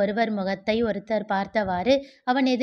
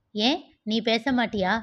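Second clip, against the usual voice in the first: plain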